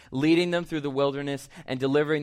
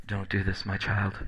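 soft, hushed, very deep baritone voice; 7 semitones lower, 3 dB quieter than usual. Imitating the gentle Jesus of paintings and movies: hushed baritone. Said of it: "hushed baritone of".

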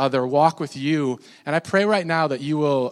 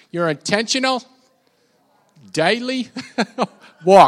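best-attempt, put-on Australian accent; 5 semitones higher, 5 dB louder than usual. Speaker asking the audience to repeat a phrase, in an australian accent. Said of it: "say it in your best Australian accent".

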